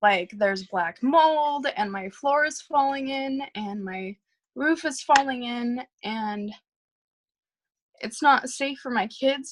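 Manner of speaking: emotional outpouring, on the edge of tears. Telling others about hard conditions at home, getting emotional. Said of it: "I'm gonna get emotional".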